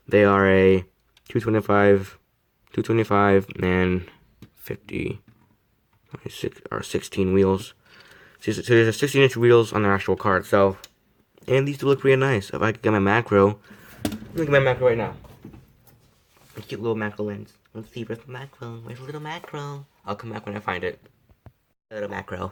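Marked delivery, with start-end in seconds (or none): 16.5-22.5 hushed, odd, silly idiot voice. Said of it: "Why am I talking like this? I sound like an idiot".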